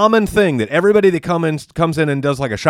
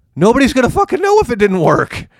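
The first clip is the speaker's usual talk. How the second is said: voice shooting way up high mid-sentence; 8 semitones higher than usual. Ranting in a conversation, high-pitched voice. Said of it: "your voice got high".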